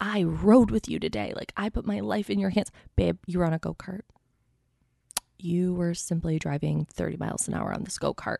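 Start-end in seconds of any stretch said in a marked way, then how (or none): 0.0-2.7 put-on top-of-the-lungs, worked-up screaming. Retelling a reality show quarrel, imitating Jen Shah screaming. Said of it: "she's screaming at this woman".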